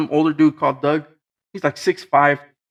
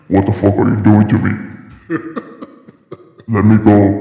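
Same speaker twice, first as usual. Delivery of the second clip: low, booming put-on voice; 6 semitones lower, 6 dB louder than usual. Acting out a woman suddenly sitting up in the ct room, imitating a deep voice. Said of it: "Deep ass voice".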